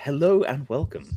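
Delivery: movie-style sci-fi facility recording announcer voice. On the podcast, showing the voice used for a sci-fi movie facility intro. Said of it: "That's the voice they have for the intro".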